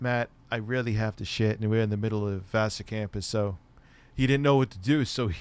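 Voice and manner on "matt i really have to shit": put-on soft-spoken voice, quieter. Retelling a friend's urgent words on campus at night: imitating Dan's soft-spoken voice. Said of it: "he has kind of a soft-spoken voice".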